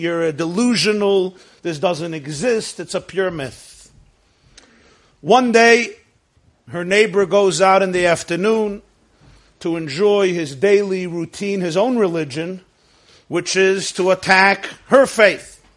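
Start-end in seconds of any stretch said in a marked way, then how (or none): none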